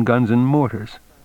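ordinary talk

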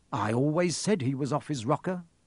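plain

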